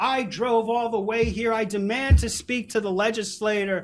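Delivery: irate, angry, demanding man's yell. Retelling a gentleman yelling at a staff member, imitating him yelling. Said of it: "started yelling at the staff member".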